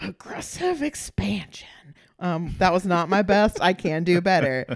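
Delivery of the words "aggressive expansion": rough, creaky, raspy villain voice. Talking about Agron's aggressive expansion, doing a Heath Ledger Joker impression. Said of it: "without doing my Heath Ledger Joker impression".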